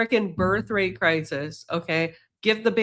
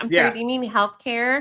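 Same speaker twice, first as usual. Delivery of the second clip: deliberately put-on Valley Girl accent; 4 semitones higher than usual. Mocking a view by asking a question in a Valley Girl accent. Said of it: "I'm gonna use my Valley Girl accent".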